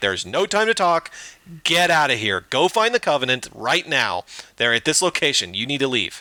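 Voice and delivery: frantic, panicked, urgent freaking-out delivery. Retelling a game scene, Cortana warns Chief to leave: imitating Cortana freaking out. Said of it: "Cortana starts freaking out".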